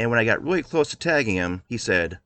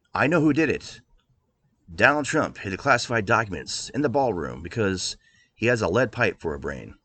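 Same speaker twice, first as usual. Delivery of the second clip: normal talking voice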